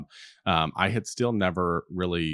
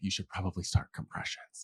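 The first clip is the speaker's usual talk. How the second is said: hushed, whispered voice; 7 dB quieter than usual. Retelling how a resource nurse told a frozen new nurse: imitating a whisper. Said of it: "she just whispered to me".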